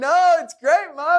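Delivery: very high, squeaky, eager, reassuring tone.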